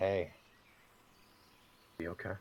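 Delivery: quiet whisper. Voicing a character who whispers in a companion's ear: whispering. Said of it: "he'll just kinda whisper in, uh, Fita's ear".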